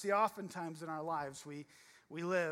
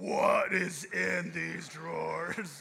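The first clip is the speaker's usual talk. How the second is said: mock booming, drawn-out angry roar, very loud, rough; 8 dB louder than usual. Retelling a childhood inspection, imitating mom's deep angry voice. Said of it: "my mom's voice went from sweet and nice to".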